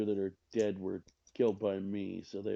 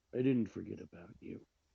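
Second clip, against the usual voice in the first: hushed whispering; 4 dB quieter than usual. Playing a d&d character who leans in to a player, whispering. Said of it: "Just leans in and whispers to you".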